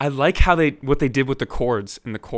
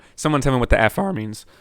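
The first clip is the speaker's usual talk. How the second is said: voice cracking. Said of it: "voice crack".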